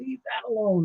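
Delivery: unfriendly fireman's drawl. Retelling telling people to stop touching the rope: imitating own not-nice fireman's drawl. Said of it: "I didn't say it that nicely, but I said it with, uh, a fireman's, uh, drawl".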